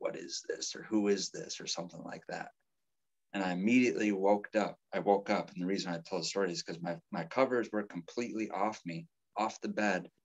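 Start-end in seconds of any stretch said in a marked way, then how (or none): 0.0-1.6 put-on creepiest voice, slower. Retelling a phone call from a dream, in the creepiest voice. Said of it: "in the creepiest voice".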